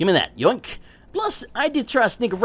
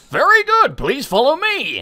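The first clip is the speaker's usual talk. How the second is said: big booming voice, pitched up, announcing style; 5 semitones higher, 4 dB louder than usual. Retelling what a monk in Oblivion says to the player, booming voice. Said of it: "literally in a booming voice is like".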